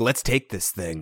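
put-on whispering. Recapping a show, quoting what one woman said to another, retelling a whisper. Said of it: "Tayshia's whispering".

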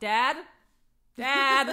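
very loud, high shout at the top of the lungs. Retelling how they call for Dad instead of going downstairs, retelling a shout. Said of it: "first I shout".

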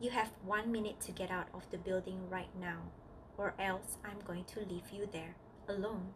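ordinary talk

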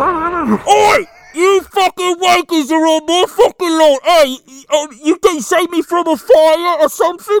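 put-on Cockney accent. In a Michael Myers joke, speaking as Michael Myers in a Cockney accent. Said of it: "michael myers is just Cockney".

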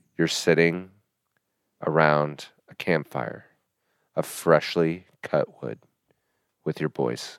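soft, sultry voice, halting with pauses. Closing a podcast, a host addresses the listeners in a sultry voice. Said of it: "I'm even going to use my sultry voice".

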